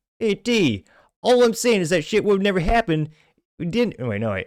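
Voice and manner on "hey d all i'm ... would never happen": very high, loud, bad put-on Italian accent. Speaker quotes a post about Paulie from The Sopranos, doing Paulie's accent. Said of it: "I don't know if I can do Paulie's accent".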